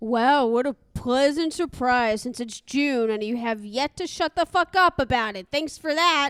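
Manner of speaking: fake gratitude, heavy with sarcasm. Acting a firefighter character's retort to a bragging colleague: sarcastic. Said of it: "I'm also being sarcastic".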